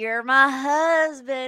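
sudden, loud put-on country accent. Retelling what Colleen said to Matt, in Colleen's sudden country accent. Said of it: "Colleen got this country accent all of a sudden".

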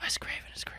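unvoiced hushed whisper.

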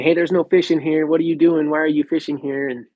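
acted-out, accusing holler, kept light and mild. Retelling how a neighbor yelled about fishing there: imitating someone yelling. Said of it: "yelling at me".

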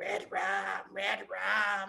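croaky put-on voice. Describing a kid suddenly switching voices, doing his croaky old-smoker frog voice. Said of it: "in weird voices".

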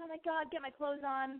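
mock frantic freak-out, high and hushed. Recounting the moment of learning someone saw them naked, retelling freaking out. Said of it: "So I'm freaking out".

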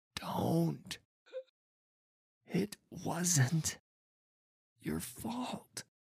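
high, labored voice, every word strained with pain. Marcino speaks to the boy holding his hand, labored and pained voice. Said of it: "Every word labored and pained".

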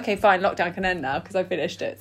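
ordinary delivery

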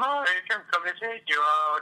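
high whining voice. Retelling Lorch telling Mike he's coming to take him out, Lorch voice, mock-whiny. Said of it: "he's got like that whiny voice, so it's like".

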